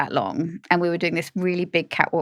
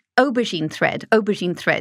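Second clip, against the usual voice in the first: ordinary talk, nothing marked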